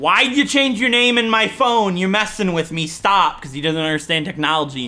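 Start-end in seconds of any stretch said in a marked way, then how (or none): 0.0-3.4 put-on yelling. Retelling a confused texter's angry messages: imitating someone yelling. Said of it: "yelling at me".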